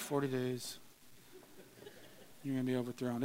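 flat, listless, half-hearted whisper. Wondering whether someone really yelled a doom warning, mock half-hearted, not yelled. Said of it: "if he even really yelled it or if he was just kind of like".

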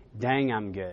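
mimicked muttering. Retelling what a man said to himself walking off the stage: retelling an under-breath mutter. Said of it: "under his breath says to himself".

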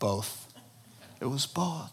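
mock sad, very hushed, quiet delivery. Retelling a walking companion's answer about the girl or the car: retelling a sad answer.

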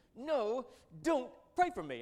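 raging, swooping shriek, very loud and high. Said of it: "he screamed".

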